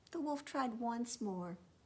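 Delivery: ordinary delivery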